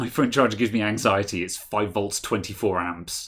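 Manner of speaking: usual speaking voice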